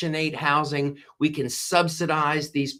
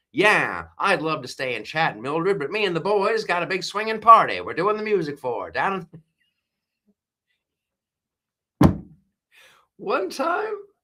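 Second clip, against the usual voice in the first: put-on old-time Hollywood transatlantic accent; 2 semitones higher than usual. Showing off accents, the speaker improvises an old-movie line, in an old-time transatlantic accent. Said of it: "This is the one in the old time movies".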